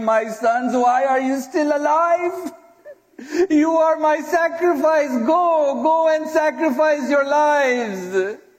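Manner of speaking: tearful crying plea. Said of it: "she would say".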